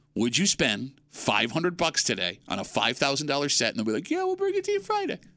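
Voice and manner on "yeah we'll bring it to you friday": voice trailing off upward, much higher, faster. Mimicking how furniture sellers promise delivery, voice trailing off upward. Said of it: "their voice trails off and up".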